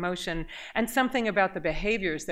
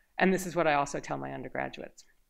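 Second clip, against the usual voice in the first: normal talking voice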